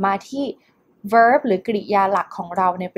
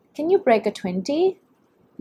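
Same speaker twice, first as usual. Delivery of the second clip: rising pitch at the end on 20; 5 semitones higher than usual. English lesson on question intonation: rising pitch on 20. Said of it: "จะเห็นว่ามันขึ้นเสียงสูงที่ท้ายประโยค".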